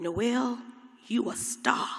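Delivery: hoarse voice. Quoting what he always told the speaker, in an impression of him. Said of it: "let me see if I can still do an impression of him with my hoarse voice".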